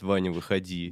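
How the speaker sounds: ordinary talk, nothing marked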